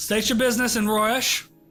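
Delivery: guard voice calling out from a distance. Game master voices a tower guard hailing the approaching party: guard yelling down. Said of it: "He yells down".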